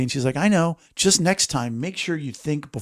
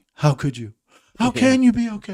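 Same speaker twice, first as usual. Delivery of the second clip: put-on crying voice, pitched higher; 7 semitones higher than usual. Retelling a brother-in-law breaking down crying about the speaker's son: imitating Rich crying. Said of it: "And he broke down crying".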